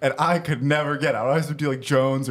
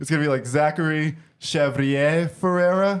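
careful attempt at French-sounding pronunciation; 2 semitones higher than usual. Saying a name live on air a second time, trying a better accent. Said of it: "Let me try with a better accent here".

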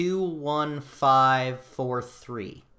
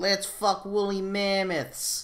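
high, slow, dumb, silly voice, dragged out; 6 semitones higher than usual. Quoting a line from the show: stupid Justin Roiland voice. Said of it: "stupid Justin Roiland voice".

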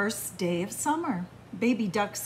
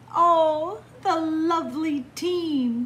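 high, loud, slow trilling voice; 5 semitones higher, 5 dB louder than usual. Narrator reading a story, voicing Mrs. Duck greeting the swim team: Mrs. Duck trilling. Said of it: "[name] bobbed and bounced in the water with [name]. / trilled Mrs".

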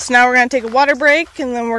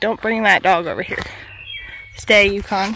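normal talking voice

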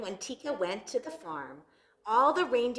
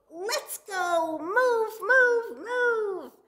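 very high, very slow, loud drawn-out shout; 11 semitones higher, 5 dB louder than usual. In a story, a character urges the reindeer herd to move; shouting. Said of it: "and shouted out".

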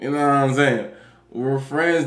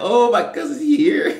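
squeaky, very high voice breaking and cracking; 9 semitones higher than usual. Teasing a listener about getting caught in a lie, mimicking a cracking voice. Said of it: "So your voice cracks".

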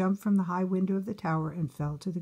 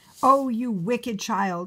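loud, drawn-out angry cry in a witch voice; 4 semitones higher, 5 dB louder than usual. A narrator reads the witch's line to Rapunzel, angry cry. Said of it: "cried the witch".

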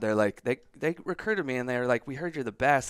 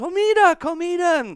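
very high, very loud, shrill excited shout; 10 dB louder than usual. A little girl at the door yells to her family, retelling a little girl's yell. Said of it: "she literally yells".

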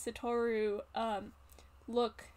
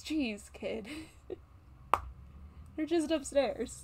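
surprised, taken aback, caught off guard; 3 semitones higher than usual. A narrator voices a character looking at you surprised; surprised. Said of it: "looks at you surprised and goes".

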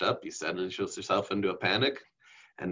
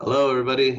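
raised, level robotic monotone, pitched up; 6 semitones higher, 9 dB louder than usual. Imitating a student getting up to start speaking, in a robotic delivery. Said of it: "That's super robotic".

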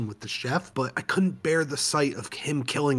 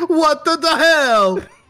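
loud, shrill, high-pitched yell; 14 semitones higher, 11 dB louder than usual. Voicing a slapped chef who reacts: Chris Pratt voice. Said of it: "That was a better Chris Pratt voice".

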